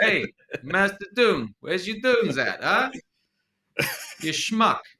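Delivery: very high, put-on Italian New York accent. Asked by another speaker to say Dune in a New York accent; Italian New York accent. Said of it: "What kind of New York is that? Italian in New York?".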